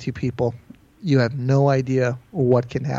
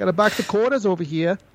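put-on tough-talk Boston accent, pitched up; 6 semitones higher than usual. Imagining what a man said scaring off a cat: imitating a Boston accent. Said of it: "from Boston".

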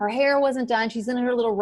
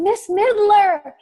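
very high-pitched, loud calling shout; 10 semitones higher, 6 dB louder than usual. Retelling calling out to a woman walking by: retelling own shout. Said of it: "I shout out".

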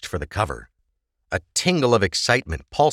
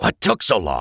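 low hissed voice; 5 semitones lower than usual. Shifty Eyes appears from the shadows as the pair slip out, hissed. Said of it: "Shifty Eyes hissed".

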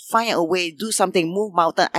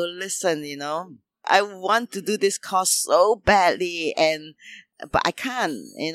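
usual speaking voice

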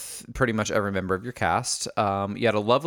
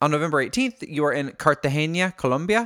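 put-on Colombian accent, pitched much higher; 5 semitones higher than usual. Speaker slips into their Colombian character for this line: Sofia Vergara impression. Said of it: "That was actually a pretty decent accent".

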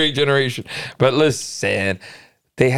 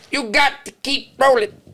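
very high, squeaked-out, pitched-up voice; 12 semitones higher than usual. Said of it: "Let me see if I can get a better [name] than that".

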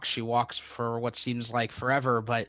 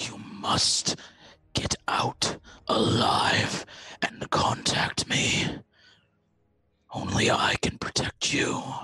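unsettling, eerie, creepy put-on voice. Narrating a mysterious voice heard while floating in nothing, creepy voice. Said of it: "That voice is even creepier on the mic".

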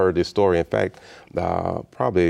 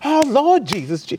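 acted, very high, loud wailing cry; 5 dB louder than usual. A speaker retelling how a woman reacted to him, imitating her Holy Ghost meltdown. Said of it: "she went into a Holy Ghost meltdown".

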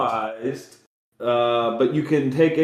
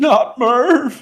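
very high, strangled, choked-back near-sob; 11 semitones higher, 3 dB louder than usual. In a game, voicing the big guy up on the ceiling, choking back a sob. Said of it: "he chokes back a sob".

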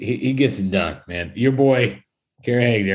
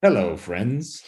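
put-on golf announcer voice. Imagining a golf broadcast calling out a fan's shout: Jim Nantz impression. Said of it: "Jim Nantz would be like".

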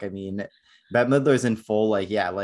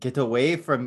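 odd put-on Irish accent; 3 semitones higher than usual. Joking about characters having British accents, the speaker does a weird Irish accent.

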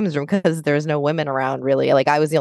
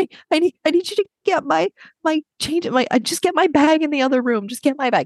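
put-on tearful crying voice, higher pitch; 12 semitones higher than usual. Retelling asking someone knocking on the door to get a bag: imitating own past crying. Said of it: "I'm, like, crying".

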